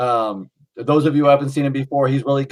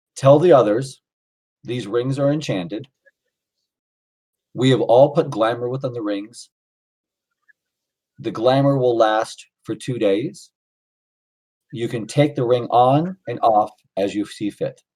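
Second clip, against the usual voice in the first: whispering in a put-on character voice; 2 semitones lower than usual. Voicing a figure who walks up and speaks into Montana's ear: whispering in character. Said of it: "he whispers all that to you".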